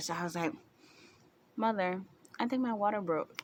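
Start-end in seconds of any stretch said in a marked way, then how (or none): 1.5-3.4 acted, very calm, composed, unruffled, matter-of-fact tone. Retelling what they told their mother while she watched TV, retelling own calm voice. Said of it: "very calmly".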